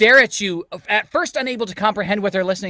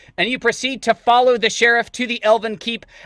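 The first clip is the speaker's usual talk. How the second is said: ordinary delivery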